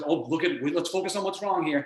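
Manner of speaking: normal talking voice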